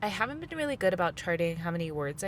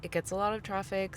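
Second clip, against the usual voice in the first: ordinary talk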